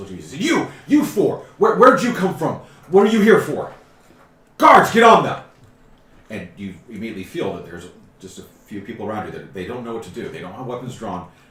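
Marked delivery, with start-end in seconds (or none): 0.4-5.4 shrill, booming, very loud, high yelling. Voicing a dwarf on top of crates, yelling directions at four newcomers: yelling directions. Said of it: "yelling directions".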